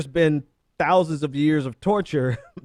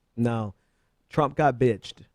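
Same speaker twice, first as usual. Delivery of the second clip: plain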